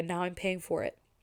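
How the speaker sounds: ordinary delivery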